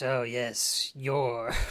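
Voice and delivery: evil-sounding voice, low. Retelling how the shopkeeper talks on a call: evil-sounding voice. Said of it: "like, evil-sounding voice".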